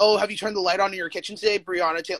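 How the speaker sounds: ordinary delivery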